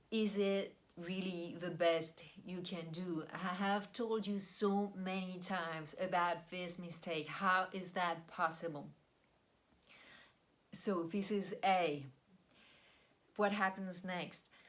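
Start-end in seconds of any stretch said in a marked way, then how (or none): none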